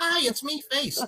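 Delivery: put-on very high-pitched kids' TV style voice. Joking about sounding like a cartoon, then greeting: Face from Nickelodeon voice. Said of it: "I sound like friggin' Face from Nickelodeon".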